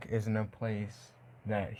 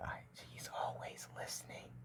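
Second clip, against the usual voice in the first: whispered, barely voiced, hushed, secretive. Retelling a story, acting out a character's line: whispering as Goku. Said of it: "Goku, like, whispers".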